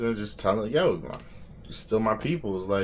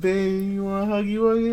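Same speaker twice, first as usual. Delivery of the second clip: mock baby talk, higher pitch; 10 semitones higher than usual. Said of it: "Your girl be like".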